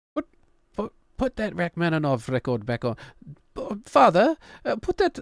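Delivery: put-on British accent. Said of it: "they're British kids now".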